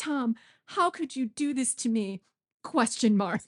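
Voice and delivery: high, distraught woman's voice, pleading. Retelling a scene where a woman dictates a text message by voice; imitating a distraught woman. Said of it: "this distraught woman like give a like re- like voice command".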